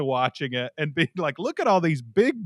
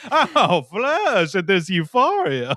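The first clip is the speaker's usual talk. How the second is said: put-on dainty, delicate Southern man's accent; 4 dB louder than usual. Reacting to a show, doing the speaker's delicate southern man voice. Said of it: "my delicate Southern man voice".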